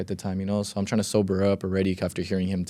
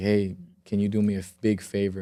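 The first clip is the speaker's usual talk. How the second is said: put-on crying voice, slower pace. Retelling calling your dad at night after someone was shot, retelling crying on the phone. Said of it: "And I'm like crying on the phone".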